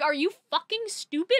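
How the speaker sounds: mock sincere, menacing tone. Explaining a lyric by acting out Athena asking: imitating a menacing genuine question. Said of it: "She's legitimately like".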